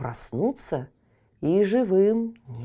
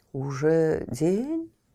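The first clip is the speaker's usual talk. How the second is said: sleepy, drowsy-sounding voice. Narrator reading an awakened knight asking a question, sleepy voice. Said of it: "спросил один сонным голосом".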